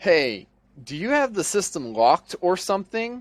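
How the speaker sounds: mock confused, high, puzzled voice. Retelling what a longtime employee asked about the system: imitating a confused question. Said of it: "she says in a confused voice".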